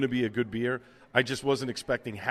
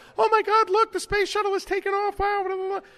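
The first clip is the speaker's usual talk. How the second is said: put-on very high, loud, whiny little-kid voice; 5 dB louder than usual. Recounting a tape the speaker made as a sixth grader; imitating whiny little kid voice. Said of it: "little kid with a whiny voice going".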